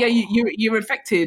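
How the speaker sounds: plain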